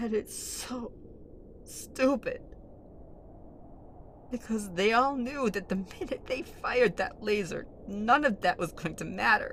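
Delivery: slightly crying voice. A character speaks of past leaders' petty fights: crying a bit. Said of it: "[crying a bit]".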